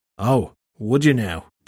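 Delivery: slow, unhurried, flat-toned voice. The fairy turns his head to face Shelley and answers her in a flat tone. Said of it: "the fairy said in a flat tone".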